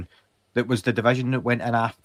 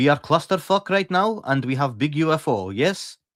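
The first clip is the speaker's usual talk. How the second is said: fake thick Russian accent, higher and louder. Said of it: "That's a good, that's a good Russian accent".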